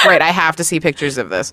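ordinary talk, nothing marked

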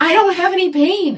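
very high, loud shouted yell. Telling how a woman jumped to her feet when the gavel came down, retelling someone yelling. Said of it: "she just kept yelling".

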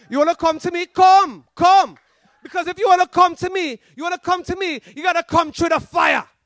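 loud put-on Jamaican accent, preacher-style calling out. Retelling a man coming down the aisle at the Ohana Court, Jamaican accent. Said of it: "with a Jamaican accent".

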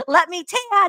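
shrieking outburst, high and loud scream. Recapping an episode where she screams at them, imitating a scream. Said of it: "she's screaming".

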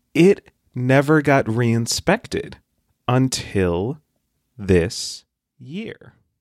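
slow, overly dramatic delivery. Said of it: "practicing your dramatic voice".

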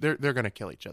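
ordinary talk, nothing marked

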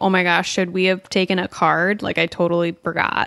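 ordinary talk

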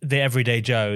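ordinary delivery

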